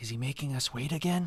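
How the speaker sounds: soft, hushed half-whisper. Describing a waiting crowd as one member speaks up, half-whispering. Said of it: "you hear somebody whisper like".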